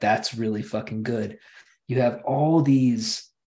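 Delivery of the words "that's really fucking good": ordinary delivery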